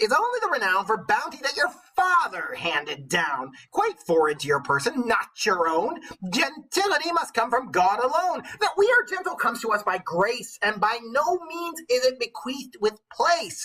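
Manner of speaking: high, put-on witch character voice. Reading a character's long speech from a tale aloud, in witch voice. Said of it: "go back into my witch voice".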